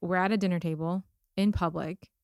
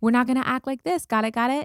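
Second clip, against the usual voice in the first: patronizing, high and raised talking-down tone; 5 semitones higher, 6 dB louder than usual. Mocking a gentle-parenting technique: imitating a patronizing high voice. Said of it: "that feels patronizing to me".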